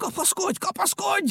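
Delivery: very high, crazed, madman-like voice, repeated words. Narrator reading a story, Pompom keeps repeating to Picúr, like a madman. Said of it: "mint egy eszelős".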